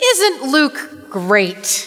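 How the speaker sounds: ironic, sarcastic delivery with a sing-song tune. A preacher tells the congregation what he thought while writing the sermon, sarcastic. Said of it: "that was sarcasm".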